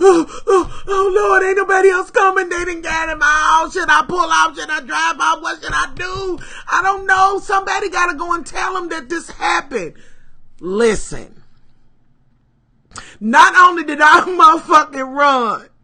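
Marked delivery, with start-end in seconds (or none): 0.0-9.9 mock ugly crying, higher. Speaker telling a story about running off, retelling ugly crying. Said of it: "Ugly crying".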